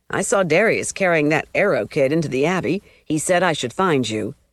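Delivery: ordinary delivery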